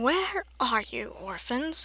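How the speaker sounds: scratchy, called-out voice. Narrator reads Count Olaf calling out for the orphans in a scratchy Count Olaf voice. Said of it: "called out in his scratchy voice".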